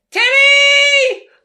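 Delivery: very high, very loud, shrill, drawn-out scream. Describing how women react when he's in trouble, imitating women calling out Teddy. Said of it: "I'm going to do my best impression".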